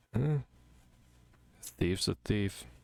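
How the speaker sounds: muttered quietly under breath. Voicing Keith as he replies to another character: quietly under his breath. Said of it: "just quietly under his breath".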